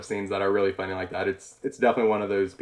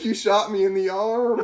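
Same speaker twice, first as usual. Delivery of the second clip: put-on hurt yell, high and drawn out; 13 semitones higher, 3 dB louder than usual. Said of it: "he's yelling it".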